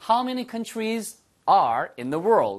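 very slow, without there.

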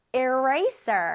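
very slow, careful modeled word "eraser". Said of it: "이번엔 eraser 나왔어요".

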